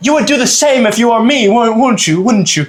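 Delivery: high, sheepish, stammering, stumbling British male voice. Retelling what an upset british guy said in a dorm room: imitating a british guy. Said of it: "So he's like".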